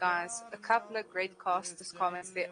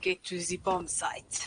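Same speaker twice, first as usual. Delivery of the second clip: put-on German-sounding accent. Asked to say the line in the best Arnold accent: attempted Arnold accent. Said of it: "in your best Arnold accent ever".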